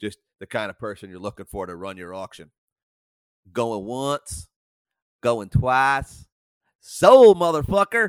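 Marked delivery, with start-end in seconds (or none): 3.5-8.1 bad Southern accent, loud, bellowed, drawn out. Podcaster imagines Ruth running an auction, in a bad Southern accent. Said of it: "that's a horrible Southern accent".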